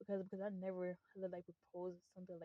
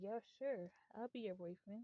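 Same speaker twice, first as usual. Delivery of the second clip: put-on, dripping sarcastic tone; 3 semitones higher than usual. Recounting a man's reply when asked to be the speaker's boyfriend: mock sarcasm. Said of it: "said sarcastically".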